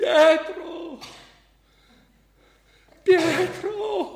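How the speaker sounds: very high emotional shout, voice breaking and cracking. A man puts down his suitcases and calls to the postman: shouting, voice breaking with emotion. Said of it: "con la voce rotta dall'emozione grida".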